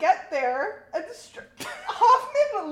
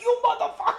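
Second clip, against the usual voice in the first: pitched-up, angry, loud yell; 5 semitones higher than usual. Discussing a scene's twists, the speaker does a Hoffman yelling impression. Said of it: "He starts yelling at him".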